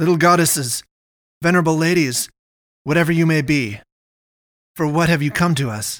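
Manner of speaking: assured, confident voice with a frantic cadence. Addressing hissing figures who surround them: confident but frantic. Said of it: "in a confident tone betrayed by a frantic cadence".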